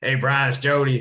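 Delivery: put-on easygoing, casual Southern American accent. Retelling a phone call, imitating Jody's Southern accent. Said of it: "his Southern accent and everything".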